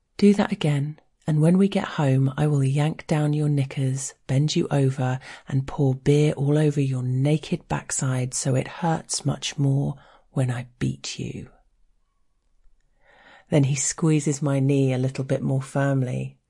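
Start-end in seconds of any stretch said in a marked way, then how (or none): none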